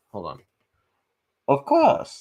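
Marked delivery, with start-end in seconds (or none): 1.4-2.2 loud, pushed, bad British accent. Speaker tries a second time to quote a film character, bad Bane impression. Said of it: "I cannot pull off a British accent".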